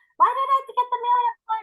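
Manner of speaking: high, fast, frustrated, mad rant.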